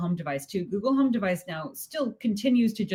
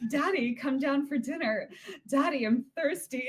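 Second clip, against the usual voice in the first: put-on cheerful alluring female voice, higher; 5 semitones higher, 3 dB quieter than usual. Imitating how Alexa reads the children's messages: imitating cheerful alluring Alexa voice. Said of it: "kind of cheerful, kind of alluring female voice".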